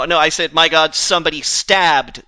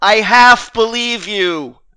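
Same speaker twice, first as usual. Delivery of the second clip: loud, drawn-out, shouted yell in character; 6 semitones higher, 6 dB louder than usual. Yelling back in character to someone claiming to be a unicorn: yelling in character. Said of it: "I'm gonna yell".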